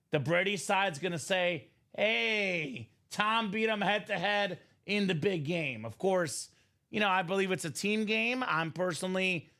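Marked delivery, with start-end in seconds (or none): none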